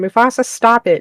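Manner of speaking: loud, high shouted yell. Retelling yelling across the room at the parrot: imitating a yell. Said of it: "I just yell across the room".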